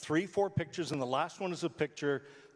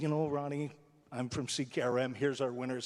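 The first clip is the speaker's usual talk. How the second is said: ordinary talk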